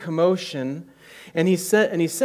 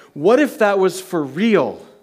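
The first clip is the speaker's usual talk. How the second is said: plain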